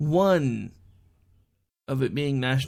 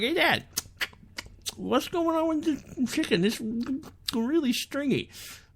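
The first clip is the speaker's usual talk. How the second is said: put-on high twelve-year-old voice through a full mouth. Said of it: "you still talk with your mouth full".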